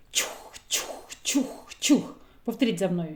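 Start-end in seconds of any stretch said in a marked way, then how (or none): 0.1-2.1 soft, whispered puttering chukh-chukh sound. Teaching the sound a boat makes on a river, quiet chukh-chukh sound. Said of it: "тихе".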